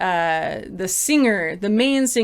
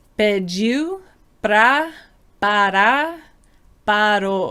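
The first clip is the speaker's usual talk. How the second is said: slow, spaced-out Portuguese words with pauses between each. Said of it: "to say it nice and slow".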